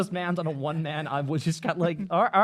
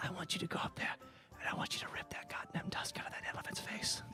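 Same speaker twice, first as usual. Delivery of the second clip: very quiet, barely audible whisper; 17 dB quieter than usual. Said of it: "thank you for whispering".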